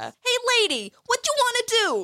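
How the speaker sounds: very high, swooping, put-on New York accent. Quoting a favourite character's lines, put-on New York accent. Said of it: "I have a New York accent".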